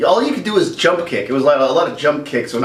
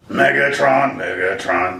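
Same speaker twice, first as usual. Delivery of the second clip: deep, low character voice; 5 semitones lower than usual. Talking about favorite Transformers, the speaker attempts a Soundwave impression. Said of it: "I don't do an impression of Soundwave, but I'm going to try".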